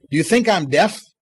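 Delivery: ordinary talk, nothing marked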